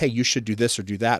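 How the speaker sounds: plain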